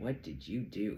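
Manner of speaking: acted, words broken up by laughter. Retelling a psychic's reading, imitating him laughing while talking. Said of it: "He laughed so hard, he couldn't stop".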